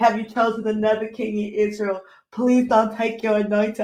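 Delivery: tearful boohoo crying with a begging, pleading tone. Retelling own past prayer to the Lord: imitating own past crying plea. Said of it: "I used to be boohoo crying".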